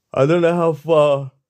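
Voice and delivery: loud, high words pulled through a yawn. Speaker addressing listeners, yawning mid-sentence. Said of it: "Sorry, I'm yawning".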